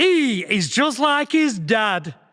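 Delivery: put-on big, broad Yorkshire accent, high and slow. Retelling a boy's line in a nativity play: broad Yorkshire accent. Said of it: "in a big, broad Yorkshire accent".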